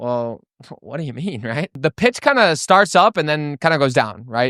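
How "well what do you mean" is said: curious, confused, low, soft, puzzled voice. Demonstrating the first type of tonality to listeners, in a curious, confused tone. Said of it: "I kind of squint my eyes and I'm like".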